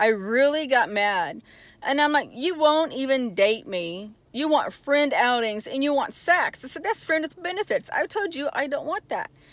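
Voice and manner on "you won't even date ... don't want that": ordinary talk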